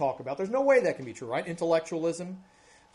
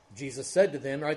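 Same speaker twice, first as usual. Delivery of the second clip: normal talking voice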